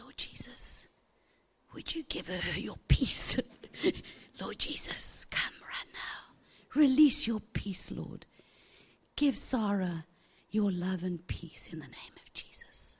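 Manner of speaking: hushed, whispered, pleading tone. Retelling praying as the nurses joined hands, a whispered prayer.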